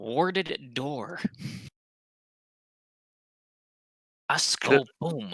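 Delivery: soft, hushed half-whisper under the breath. Playing a character, the speaker answers Kif, half-whispering. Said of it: "And I whisper back to Kif".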